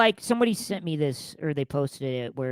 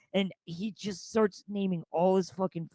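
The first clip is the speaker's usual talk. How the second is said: usual speaking voice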